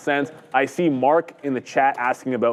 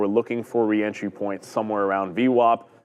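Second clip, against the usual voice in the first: ordinary delivery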